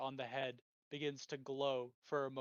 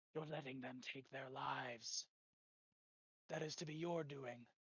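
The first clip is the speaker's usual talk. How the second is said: eerie, soft, ethereal ghostly voice; 7 dB quieter than usual. Game narrator voices the voice pestering Charles on his turn: ethereal, ghostly voice. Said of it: "ethereal, ghostly voice".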